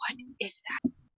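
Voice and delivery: soft, breathy, hushed whisper. Player character down a mine shaft asks about something, whispering. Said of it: "I'm just like I whisper".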